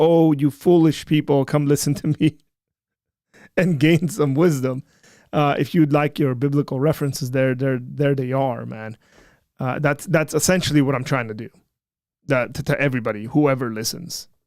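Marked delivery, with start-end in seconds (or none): none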